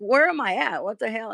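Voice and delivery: hushed, dazed, bewildered confusion. Retelling waking up a guest at an Airbnb, imitating a bewildered man. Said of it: "he woke up bewildered".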